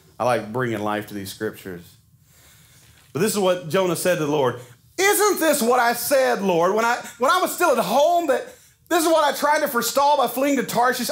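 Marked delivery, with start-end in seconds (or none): 5.0-11.1 mock declaiming voice, raised, loud, pitched up. Reading Jonah's words to the Lord from scripture, in a raised, loud voice. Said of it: "I'm going to raise my voice just a minute".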